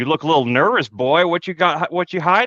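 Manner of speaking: put-on southern lawman voice, Arkansas accent. Telling listeners about being stopped by police, the speaker imitates an Arkansas cop. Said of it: "That sounds like an Arkansas cop".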